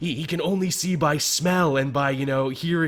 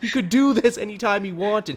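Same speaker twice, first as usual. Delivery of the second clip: put-on yelling, pitched higher than normal; 6 semitones higher than usual. Retelling what was yelled at the TV during an episode: retelling own yelling at TV. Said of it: "I was yelling at my T V".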